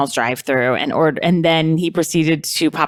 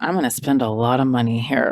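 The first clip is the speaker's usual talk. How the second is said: low, put-on sensual, seductive voice; 4 semitones lower than usual. Retelling what an entitled man said walking into a camping store, imitating someone sounding sensual. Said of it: "That sounded sensual".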